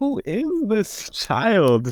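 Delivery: high, slow, mock disbelief. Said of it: "I'm like".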